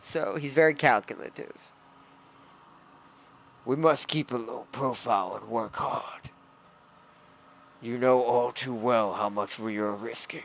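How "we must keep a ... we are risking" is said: deep, raspy, cold voice. Voicing the character Malix as the speaker pictures him, low raspy Malix voice. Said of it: "I can't do his low raspy voice".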